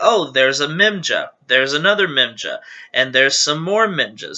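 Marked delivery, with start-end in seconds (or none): none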